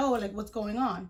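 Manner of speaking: ordinary delivery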